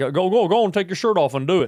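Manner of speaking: loud, high, pushy football-coach holler. Retelling how a big lumbering family friend used to belittle him: imitating dad's friend. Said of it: "he'd be like".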